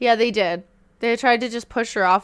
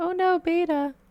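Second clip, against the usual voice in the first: very high-pitched, cartoon-style crook voice; 9 semitones higher than usual. Quoting Snake stealing a VCR: imitating Snake from The Simpsons. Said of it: "Why did I say it in that voice?".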